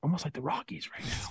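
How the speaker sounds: very quiet, hushed, breathy whisper. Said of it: "I'm gonna whisper that".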